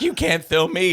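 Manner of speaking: high-pitched scream. Retelling a video of a woman screaming at her neighbor: imitating someone screaming. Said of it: "some British Karen was screaming at her neighbor".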